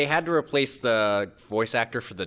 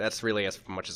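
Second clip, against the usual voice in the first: normal talking voice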